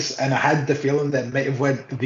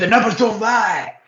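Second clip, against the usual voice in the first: high, screaming wrestling-ring shout; 7 semitones higher than usual. Retelling what a wrestler shouted in the ring: imitating someone screaming.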